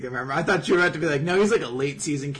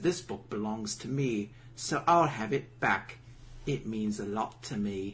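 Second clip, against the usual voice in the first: soft put-on Cockney English accent; 5 semitones lower, 8 dB quieter than usual. Narrating a showdown, voicing the character who takes back the book, in a cockney accent. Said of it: "Is he very British now?".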